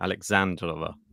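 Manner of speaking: Alexandrova with the middle syllable and stressed. Teaching how to say a name: stress on 'and' in 'alexandrova'. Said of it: "The emphasis is on and in the middle".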